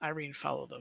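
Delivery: very quiet, low, hushed mutter under the breath. Player speaking his character's words, as low as he can under his breath. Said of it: "as low as he can under his breath".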